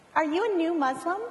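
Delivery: sweet, kindly voice. Retelling what a young woman beside the speaker asked, imitating the sweetest voice. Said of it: "She said in the sweetest voice".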